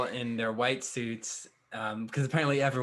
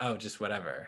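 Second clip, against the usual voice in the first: put-on disdainful voice; 2 semitones lower, 5 dB quieter than usual. Retelling how a character dismisses a taco stand: imitating a disgusted tone. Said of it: "She says it, like, with disgust".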